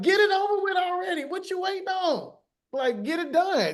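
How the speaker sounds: mock, very high yell rising upward. Retelling screaming out at God from bed: retelling own scream. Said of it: "I screamed out at God".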